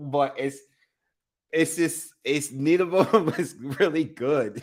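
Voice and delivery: high voice, talking through laughter. Watching a fight where neither fighter is good, laughing while talking. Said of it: "I'm laughing".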